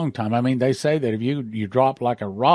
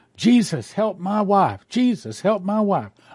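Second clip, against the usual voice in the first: put-on high, frantic, desperate scream at full voice; 8 semitones higher than usual. Retelling a woman's story of her husband running in circles, imitating him screaming. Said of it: "Over and over at the top of his voice".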